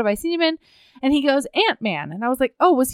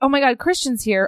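put-on panicked meltdown. Retelling the mom's reaction to a visitor: imitating a panicked meltdown. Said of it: "that meltdown of hers".

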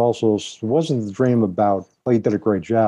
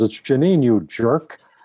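sarcastic, cutting tone; 3 semitones higher than usual. Retelling a teasing reply after a backwards hug: imitating a sarcastic retort. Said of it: "the sarcasm comes up and says".

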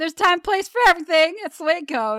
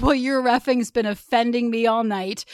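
ordinary delivery

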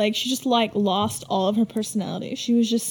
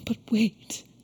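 put-on tearful voice, quieter; 4 dB quieter than usual. Retelling a scene where Elaan suddenly breaks down: imitating Elaan crying. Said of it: "And she's just crying all of a sudden".

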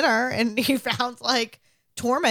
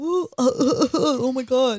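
put-on very slow, ailing, sick-sounding soldier voice; 2 semitones higher than usual. Describing sick soldiers coughing in an army: imitating a sick soldier. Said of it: "That sounded just like a sick man".

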